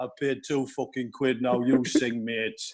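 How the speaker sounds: flat, expressionless tone. Retelling what a guy in the crowd said: imitating a deadpan reply. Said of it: "He was just deadpan".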